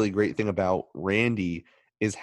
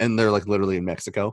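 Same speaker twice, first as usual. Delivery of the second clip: usual speaking voice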